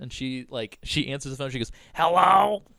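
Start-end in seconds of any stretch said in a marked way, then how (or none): 1.9-2.6 very loud, high-pitched voice. Retelling a call to the emergency line: imitating Joan's voice. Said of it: "this woman sounded like this".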